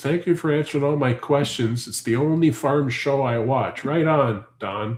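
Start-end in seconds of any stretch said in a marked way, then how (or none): none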